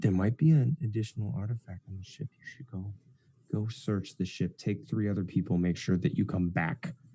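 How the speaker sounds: quiet, secretive half-whisper. Narrating a scene where a man calls someone over: half-whispering. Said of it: "in a whisper".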